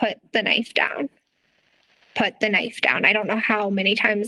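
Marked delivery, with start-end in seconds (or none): none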